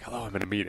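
little hushed half-whisper, very soft. Retelling how someone answers the phone in a meeting: imitating someone half-whispering. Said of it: "answer in a little bit of a whisper".

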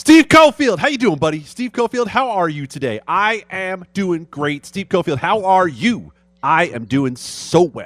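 pumped-up, extra energetic. A host greets himself by name on air and answers, extra fired up. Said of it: "you're good extra fired up".

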